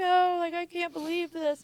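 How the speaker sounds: very high, tearful crying, sounding disbelieving. Retelling own reaction on learning of heroin use: retelling own past crying.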